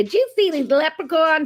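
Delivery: clumsy fake American accent. Describing american tourists on leprechaun hunts, the speaker voices one: bad american accent. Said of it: "that's probably a very bad accent".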